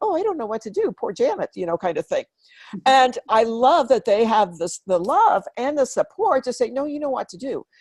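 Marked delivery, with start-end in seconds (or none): 0.0-1.5 small, high, little put-on wimpy voice. Showing the voice she sometimes goes into with her supporters, little wimpy voice. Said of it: "go into my little a wimpy voice".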